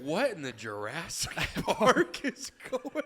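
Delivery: mock startled, bewildered exclamation. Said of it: "I'd be like".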